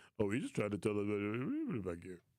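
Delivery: low, swooping, affected put-on voice, stretching us. Mocking a coworker's voice he just used on air: imitating Glenn's D voice. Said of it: "Glenn be trying to use that D voice".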